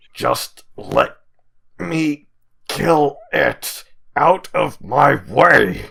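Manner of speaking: loud, rough, savage growling shout, forced through. Narrating a scene, speaker voices someone pushing through a crowd: growled voice. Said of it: "you hear this growled voice".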